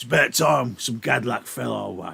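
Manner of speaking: rough, scratchy, creaky voice. Quoting a remark after riding our luck: Danny Dyer impression. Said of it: "is an impersonation of someone".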